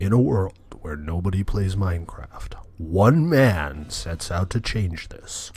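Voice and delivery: spooky, scary movie-trailer narrator voice. Showing off a voice the speaker can do: scary movie-trailer voice. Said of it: "I could do this scary voice".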